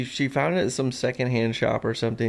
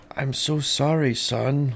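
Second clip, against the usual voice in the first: put-on Austrian accent. Playing a dad apologizing to his son, speaker uses a put-on Austrian accent. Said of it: "And that accent, too".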